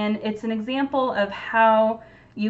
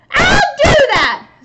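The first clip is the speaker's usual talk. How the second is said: very shrill, very loud, very high grouchy screech; 13 dB louder than usual. Reading a story aloud, the Ladybug answers back, grouchy Ladybug screech. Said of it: "screeched the late grouchy Ladybug".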